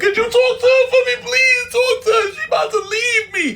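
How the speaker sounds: very high, tearful, crying, begging voice. Retelling begging a neighbor to talk to his partner: imitating himself crying and pleading. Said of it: "I'm crying. I'm on my knees".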